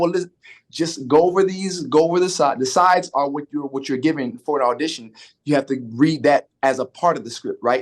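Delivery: ordinary talk, nothing marked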